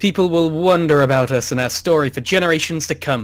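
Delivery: ordinary delivery, nothing marked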